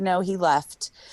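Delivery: ordinary talk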